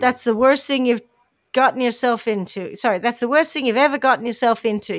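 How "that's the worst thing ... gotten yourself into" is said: usual speaking voice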